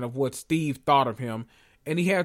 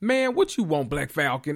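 mock irritated, annoyed, put-out tone. Recapping a show, quoting the boy who opens the door, imitating Eli's annoyed voice. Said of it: "in his annoyed voice".

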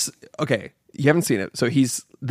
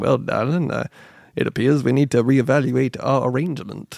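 put-on gunslinger accent. Describing a favourite film character, imitating his accent: Doc Holliday accent. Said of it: "the best accent, ... and he's just like".

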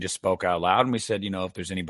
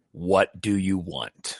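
mock stern, severe, slow, drawn-out man's voice. Retelling what a man's voice clearly said, retelling a stern man's voice. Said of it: "he like was very stern about it".

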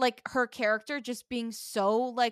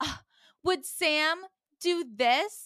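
exasperated, out of patience, fed up, pitched up; 6 semitones higher than usual. Retelling a show scene where Melanie gets fed up: imitating a fed-up character. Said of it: "Melanie gets fed up and is like".

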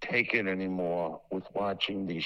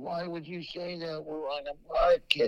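high, dragged-out, complaining voice; 8 semitones higher than usual. Retelling a phone call in which she complains: imitating her complaining on the phone. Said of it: "It was a pretty good impression".

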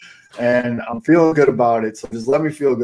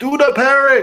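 put-on very high, goofy screaming; 14 semitones higher, 3 dB louder than usual. Imagining a Sox home run, acting out Eloy yelling at the hitter rounding second: imitating Eloy screaming. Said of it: "he's screaming at him".

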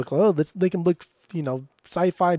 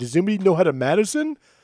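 put-on dorky voice, higher; 3 semitones higher than usual. Retelling a movie scene where Brad asks the question: imitating Brad asking stupidly. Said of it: "he asks in a really stupid way".

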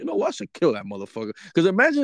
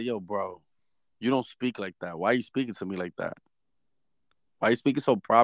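normal talking voice

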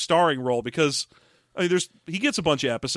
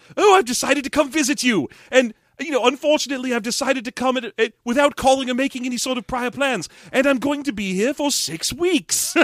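pitched-up alien creature voice; 8 semitones higher, 3 dB louder than usual. Retelling a family story, the speaker voices an unannounced visitor in ALF voice. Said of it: "I'm doing Alf's voice for him".

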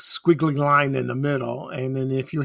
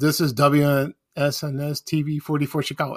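plain

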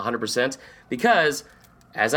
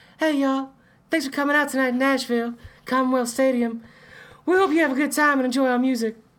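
mock 1960s boy-band falsetto stage voice; 13 semitones higher than usual. Imitating a guy greeting a nashville stadium crowd, in a falsetto 1960s boy-band voice. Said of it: "like just a falsetto from just like a 1960s all boy band".

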